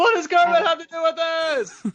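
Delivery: very high, pushed-up, sitcom-style voice. Redoing a remembered Seinfeld line, asked to perform it: Jerry Seinfeld voice. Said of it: "in Seinfeld's voice".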